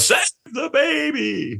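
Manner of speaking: very high, slow clown wail. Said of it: "you go".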